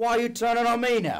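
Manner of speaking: very high, very loud, shrill angry shout. Arguing in character with a party member who scolded them: yelling in character. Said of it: "Just because you're yelling".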